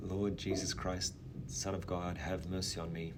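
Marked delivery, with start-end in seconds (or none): none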